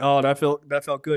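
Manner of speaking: usual speaking voice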